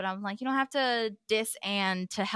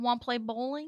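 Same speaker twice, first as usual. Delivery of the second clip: put-on mimicked little kid voice; 3 dB quieter than usual. Retelling a tv scene's line: imitating a baby toddler voice. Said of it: "He's such a little baby toddler where he's like".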